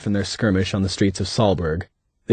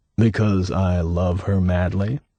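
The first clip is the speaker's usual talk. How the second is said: slow, sly tone halfway between teasing and leering; 2 semitones lower than usual. Reading a story aloud, a husband answering his stepdaughter: teasing, leering tone. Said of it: "something between a tease and a leer".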